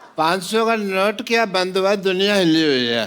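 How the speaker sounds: put-on tipsy, slurred, rambling drunk speech. Playing a doctor who says the world is shaking: drunk speech. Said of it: "आपने पी रखी है।".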